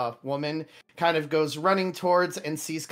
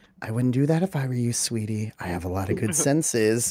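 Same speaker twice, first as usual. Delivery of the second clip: close whisper, much lower pitch; 5 semitones lower than usual. Narrator voicing a woman who whispers in the listener's ear while hugging them. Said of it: "she kind of whispers in your ear".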